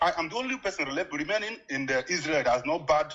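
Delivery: normal talking voice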